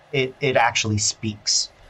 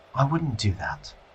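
majestic feminine voice, quieter; 5 dB quieter than usual. Voicing a talking sword that warns the party: majestic feminine voice, like Helen Mirren. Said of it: "you hear this majestic feminine voice".

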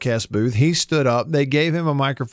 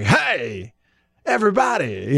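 exaggerated, swooping, sing-song sketch-comedy caricature voice. Retelling a past laugh over the bit: Will Ferrell's Harry Caray impression. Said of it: "We're doing an impression of Will Ferrell doing an impression of Harry Caray".

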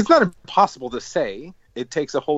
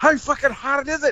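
put-on very high, slurred, drunk-sounding Scottish accent; 13 semitones higher than usual. Quoting a man the group is discussing, speak in a Scottish accent. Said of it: "with a Scottish accent".

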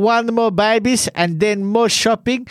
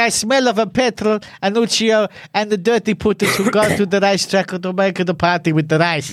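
plain

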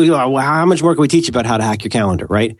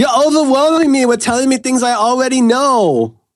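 very high, fed-up, exasperated grumble, "know" stretched; 12 semitones higher than usual. Retelling what a daughter said about being told things: imitating an exasperated child. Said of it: "with exasperation, she says".

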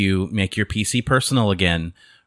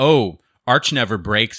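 mock sarcastic tone; 3 semitones higher than usual. Describing people who mock others' Linux choices, imitating them being all sarcastic. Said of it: "they're being all sarcastic".

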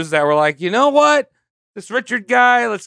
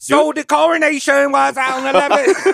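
bad, fake British accent, much higher pitch; 8 semitones higher than usual. Redoing a take on the show after being told the accent was bad, bad british accent. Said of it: "I'll do it again".

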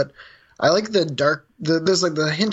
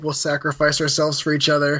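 usual speaking voice

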